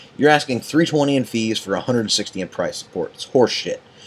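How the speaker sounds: plain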